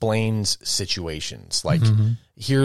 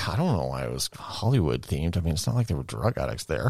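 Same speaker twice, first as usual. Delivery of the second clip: low, hushed mutter under the breath; 5 semitones lower, 5 dB quieter than usual. Retelling a remark made while shopping: imitating Sia Bell muttering under her breath. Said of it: "under her breath".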